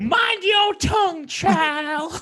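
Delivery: Southern belle voice, pitched way up. Speaking as a southern lady in a comic bit, in a southern lady's voice. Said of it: "this is a Southern lady's voice".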